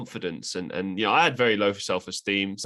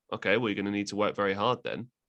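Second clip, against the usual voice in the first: put-on straight-faced, matter-of-fact deadpan; 3 dB quieter than usual. Retelling a teacher's answer to a sarcastic goal: imitating a deadpan reply. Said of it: "just dead face just said".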